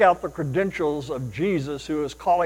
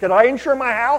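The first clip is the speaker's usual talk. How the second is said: acted eager, thrilled, pitched-up young man's voice; 8 semitones higher, 4 dB louder than usual. Telling a story of a young man in a hurry phoning an insurance agent; mock-excited voice. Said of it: "in a very excited voice".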